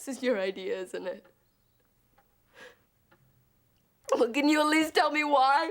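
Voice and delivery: crying, sniffling. Confronting two people who say they don't want to hurt you, crying, sniffling.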